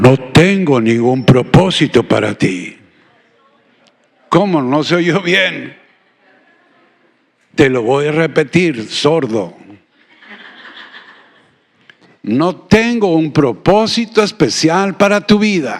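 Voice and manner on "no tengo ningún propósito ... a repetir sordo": deep, rumbling, thunderous booming voice. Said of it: "con una voz de estruendo".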